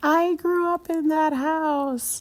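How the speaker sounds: very high, slow, drawn-out called-out yell. Retelling calling out from a car to a woman at a window: retelling a yell. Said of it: "And I just yelled".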